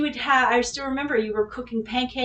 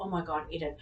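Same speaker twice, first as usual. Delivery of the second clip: panicked freaking-out voice, lower and quieter; 6 semitones lower, 12 dB quieter than usual. Retelling a moment after damaging a borrowed car: imitating own panic. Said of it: "And I'm freaking out".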